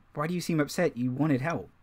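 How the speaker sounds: whispered delivery. Voicing a character who leans over to another: whispering. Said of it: "She whispered it".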